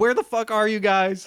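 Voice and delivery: mock agitated, upset, exasperated, fed-up outburst. Retelling an angry phone message left at a hotel: imitating someone very upset. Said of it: "he's so upset".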